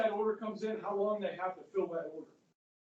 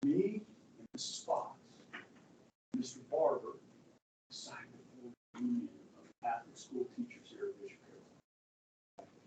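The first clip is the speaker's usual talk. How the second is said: hushed secretive whisper; 6 semitones lower, 6 dB quieter than usual. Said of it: "the reason I'm whispering".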